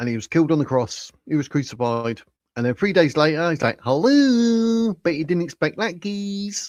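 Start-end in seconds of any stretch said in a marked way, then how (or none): 3.8-4.9 very high, camp, drawn-out voice. Imitating Jesus three days after the crucifixion: weird camp Jesus voice. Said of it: "didn't sound so weird or as camp as I did".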